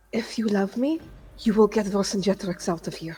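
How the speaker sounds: furious whisper. Voicing a character whispering to another character: angry whisper. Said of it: "angry as hell".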